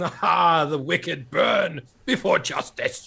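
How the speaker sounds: booming high declaration. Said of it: "It talks like Brian Blessed".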